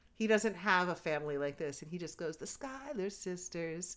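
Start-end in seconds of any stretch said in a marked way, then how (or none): 2.4-4.0 very hushed, soft, quiet admiring murmur. Discussing a reunion scene, speaker acts out how he said it, imitating a soft, admiring voice. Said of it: "in that soft voice".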